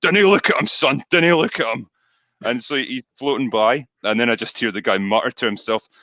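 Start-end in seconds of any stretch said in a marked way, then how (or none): 0.0-1.9 big, pitched-up Glaswegian voice. Recounting a river incident, the speaker imitates a man telling his son: big glaswegian voice. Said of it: "this big Glaswegian voice going".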